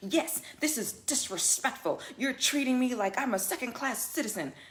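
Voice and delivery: acted distressed tone. Retelling a passenger's demand after asking him to move: imitating an upset passenger. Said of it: "And he really got upset".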